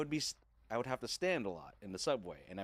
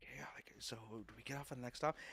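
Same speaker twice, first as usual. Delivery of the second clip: secretive, hushed whisper; 9 dB quieter than usual. Retelling asking on the subway about the next stop: imitating own whisper. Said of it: "I'm whispering".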